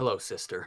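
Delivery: hushed, whispered muttering under the breath. Voicing a character greeting his sister as he strikes: muttered under his breath. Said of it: "under his breath".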